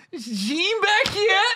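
very high, slow, anxious, drawn-out delivery. Retelling a comic stalling on stage, imitating Say sounding nervous. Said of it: "and he goes".

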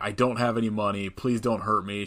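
normal talking voice

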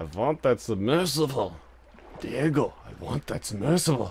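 boss sabertooth villain character voice. Speaker, mid-game, does an Ice Age boss Sabertooth impression. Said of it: "That was my Ice Age impression of".

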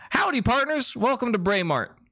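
very high, perky, peppy, upbeat voice. A shop gentleman waves newcomers in at 1 or 2 a.m., peppy. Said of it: "He seems particularly peppy".

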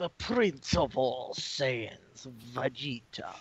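stagey, theatrical put-on voice that sounds like a vampire. Attempting the TFS voice, which came out vampire-like: TFS Vegeta voice attempt. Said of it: "I was trying to do the TFS voice".

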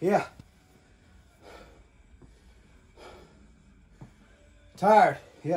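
out of breath. Taking a short rest during a workout, out of breath. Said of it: "I'm out of breath".

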